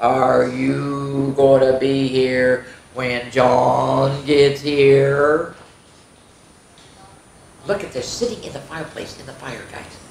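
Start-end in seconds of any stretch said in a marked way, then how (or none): 0.0-5.5 very slow snarling drawl, "you" stretched out. Reading a story, the cat by the fireplace speaks to the man: slow, snarly voice. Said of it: "in a slow, snarly voice".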